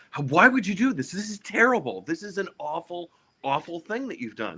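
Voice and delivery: play-acted, very high-pitched shrieking, screaming yell. Retelling a scene where a worker yells at someone: imitating someone yelling and screaming. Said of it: "he's yelling and screaming at Michael".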